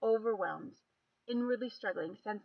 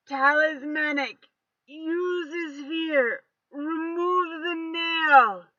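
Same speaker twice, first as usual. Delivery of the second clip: loud, slow growl through locked teeth; 8 semitones higher, 14 dB louder than usual. Narrator reads Coulter's orders to Seth, growling through clenched teeth. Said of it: "he growled through clenched teeth".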